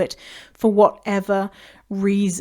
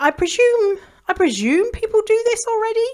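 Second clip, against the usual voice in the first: very high, thin piping voice; 13 semitones higher than usual. Speaker talking about normalizing body diversity, in a very high voice. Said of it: "I'm saying with a very high voice".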